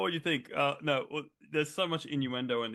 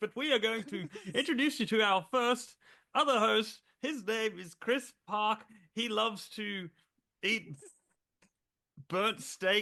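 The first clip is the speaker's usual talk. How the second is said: slow, drawn-out fake British accent; 7 semitones higher than usual. Show host introducing the other host in a put-on British accent. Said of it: "I don't know why I'm talking British".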